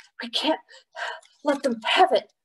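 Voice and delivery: high, breathless, out-of-breath words between gasps. Pong, galloping around the courtyard with Sompkit on his back, panting. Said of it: "panted Pong".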